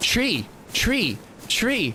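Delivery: put-on high, babyish little-toddler babble. Describing how a toddler says tree, doing her toddler voice. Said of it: "toddler voice".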